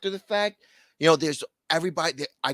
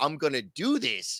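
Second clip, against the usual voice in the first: ordinary talk, nothing marked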